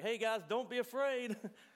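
loud, high, reassuring yelling.

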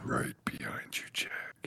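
put-on deep voice, whispered, very slow. Showing the spooky line planned for a ghost game: put-on deep voice. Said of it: "Saving the deep voice for when".

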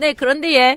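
put-on Gyeongsang accent in an old woman voice. Reading a phone-call story aloud, voicing the hospital's reply: gyeongsang grandma voice. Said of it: "바로 영남 할머니 목소리".

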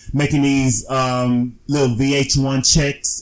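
ordinary talk

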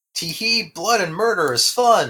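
put-on high, cutesy anime girl character voice. Describing a violence-loving game character, the speaker mimics her in a cutesy anime girl voice. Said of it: "I talk like a cutesy anime girl".

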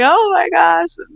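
very high, tearful voice, crying through the words. Retelling how she called back after looking it up: imitating someone crying. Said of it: "she calls me back crying like".

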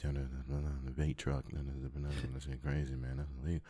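very soft, low, hushed, barely audible murmur. Retelling what a barber says while cutting hair: imitating a barber speaking really low. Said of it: "he speaks really low".

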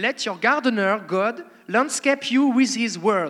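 English read in a French accent. A speaker quotes an English Bible version to an audience, with French accent. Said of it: "je vais vous le dire avec mon accent français".

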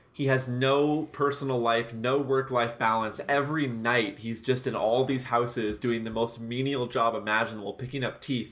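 ordinary talk

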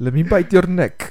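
put-on vampire voice with Russian-sounding accent. Trying an accent that comes out Russian, the speaker slips into a Dracula voice. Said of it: "Like Dracula".

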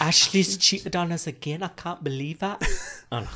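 poor put-on Geordie accent. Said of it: "Why am I so bad at a Geordie accent?".

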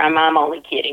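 plain

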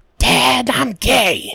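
very high-pitched, creature-like voice. Playing a voice game, assigned a cartoon character to imitate: Bobby Hill impression. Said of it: "You're going for like a Schmeagol thing".

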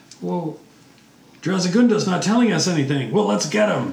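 high goblin monster voice. Game master voices the other hobgoblins, in a hobgoblin voice. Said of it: "And the other hobgoblins say, / they are getting ready to do some sort of ritual sacrifice as the sun hits the structure".

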